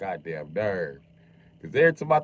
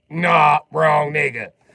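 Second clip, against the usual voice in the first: very loud, high, scornful and dismissive brush-off; 8 semitones higher, 9 dB louder than usual. Acting out the dog answering a police dog: voicing a dismissive dog. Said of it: "She was like".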